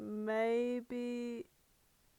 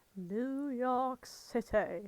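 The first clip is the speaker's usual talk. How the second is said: put-on slow, drawn-out mispronunciation. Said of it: "Matt Berry mispronouncing things".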